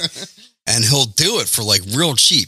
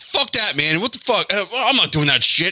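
mock irate ranting yell, pitched up; 8 semitones higher than usual. Retelling a phone call with a business owner: imitating someone yelling. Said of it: "He's just yelling at me".

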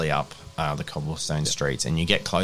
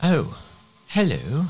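put-on very high old lady voice; 11 semitones higher, 5 dB louder than usual. Voicing a townsperson greeting the players: older lady voice. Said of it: "says an older lady".

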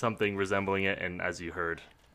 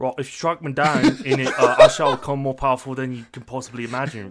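belted out, high and loud; 6 semitones higher, 12 dB louder than usual. Trying to beat the last Ben Kenobi impression, British accent. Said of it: "let's hear you do better".

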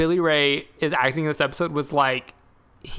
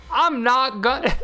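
put-on halting dad voice, pitched higher; 8 semitones higher than usual. Retelling a prank call scene, imitating Billy Ray's line delivery. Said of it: "this is exactly his line delivery".

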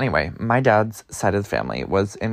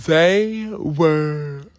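yawning, pitched up, words held long; 8 semitones higher, 3 dB louder than usual. Tired speaker telling a story about cousins, yawning mid-sentence. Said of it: "I'm sorry, I'm yawning".

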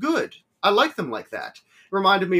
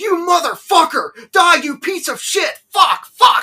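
put-on scream, higher and louder; 10 dB louder than usual. Retelling a movie scene where the director is screaming at a vampire: imitating someone screaming. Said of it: "screaming at him".

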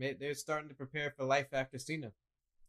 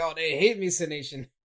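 very loud put-on giddy yell; 2 semitones higher, 10 dB louder than usual. Retelling a wrestler's entrance to a booing crowd: imitating John Cena yelling giddily. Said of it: "yelling, right? He's all, like, giddy".

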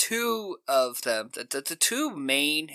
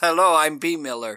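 booming, echoey voice, like in a well; 5 dB louder than usual. Retelling a film scene where a woman introduces herself: imitating a voice from a well.

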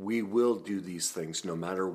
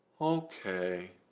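put-on devastated character voice. Retelling how a girl replied when told to stay out of the way, Eeyore voice. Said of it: "just like Eeyore".

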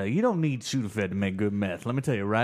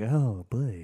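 put-on Southern accent. Retelling how a grandma turned southern after moonshine: imitating grandma with a southern accent. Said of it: "you immediately turn southern".

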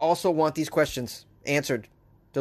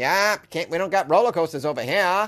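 not-so-great put-on Maine accent. Speaker comments on a roller coaster stolen from Ohio, in a not-so-great Maine accent. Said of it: "That's a Maine accent, but it's not so great".

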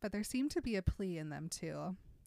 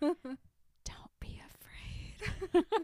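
whispered, begging, pleading tone; 9 semitones higher than usual. Reading a novel aloud, a character begging: whispered plea. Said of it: "I begged in a whisper".

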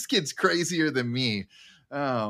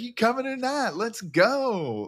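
yelling, higher in pitch; 9 semitones higher than usual. Retelling a movie scene where Russ yells at the team: imitating Russ yelling. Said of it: "he's yelling at the team".

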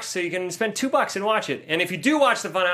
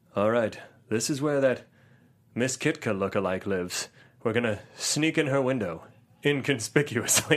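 very low, creepy voice; 8 semitones lower, 4 dB quieter than usual. Speaker imagines how a creepy movie character would talk: creepy peeping-tom voice. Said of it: "He sounds like a peeping Tom".

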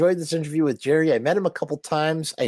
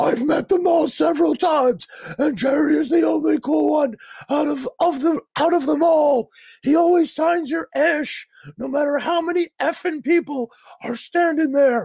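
very high, shouty all-caps reading voice; 10 semitones higher than usual. Reading a viewer's all-caps comment aloud in a voice representing all caps. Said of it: "read this in a voice that represents the all caps locks".

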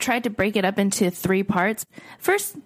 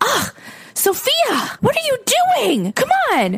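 put-on very high, sing-song, swooping scolding yell; 5 dB louder than usual. Retelling a woman in the West Village yelling at her little dog, imitating her yelling.

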